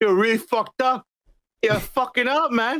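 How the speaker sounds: put-on Boston accent with rough swearing. Imagining Batman scolding Barry, in a Boston accent as Ben Affleck. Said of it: "said it in a Bostonian fucking way".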